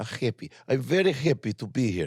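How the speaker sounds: spoken in a Russian accent. Repeating a simple line with a partner, in a Russian accent. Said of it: "Russian accent".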